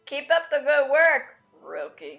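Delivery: very loud, mean, swooping sarcastic tone. Repeating a character's line just heard in the audio, imitate its sarcastic tone. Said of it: "See that tone?".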